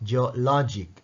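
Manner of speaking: geologic with stress on middle syllable 'lo'. Pronunciation lesson on three-syllable geologic, geologic stressed on middle syllable. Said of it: "அதைத்தான் நாங்க stress பண்ணணும்".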